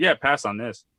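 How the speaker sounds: usual speaking voice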